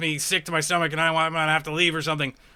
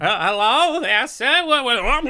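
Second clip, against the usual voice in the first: put-on old man voice, pitched higher and louder; 6 semitones higher, 4 dB louder than usual. Voicing an old man whom a player rushes over to: old man voice. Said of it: "an old man who looks over at you. He's like".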